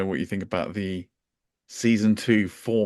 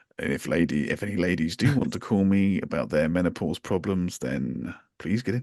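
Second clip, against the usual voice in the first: put-on creepy voice; 3 semitones lower than usual. Retelling another speaker's past words to him: imitating a creepy voice. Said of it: "You put in that creepy voice".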